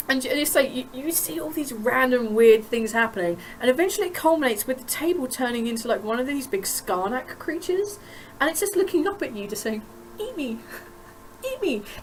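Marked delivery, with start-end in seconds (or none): 10.2-11.8 put-on sweetest little girl voice, very soft, high and hushed. Narrating a scene, the storyteller voices a creature looking up at you: sweet little girl voice. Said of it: "in like the sweetest little girl voice you've ever heard".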